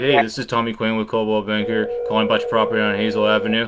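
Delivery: mock dull, unenthusiastic, flat monotone phone voice. Coaching a caller on phone manner, imitating his flat, unenthusiastic delivery. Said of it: "you sounded kinda like".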